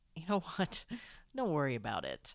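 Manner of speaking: mock patronizing, talk-down tone, swooping. Retelling what a coworker told Christine: imitating a condescending tone. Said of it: "In that condescending way people say".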